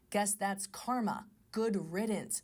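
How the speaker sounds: ordinary delivery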